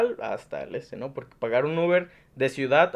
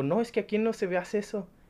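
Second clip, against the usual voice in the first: put-on rude, curt, snotty voice, pitched up; 6 semitones higher, 5 dB quieter than usual. Retelling what a police officer said at the Metrobús: imitating a rude officer. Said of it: "así bien sangrón me dijo".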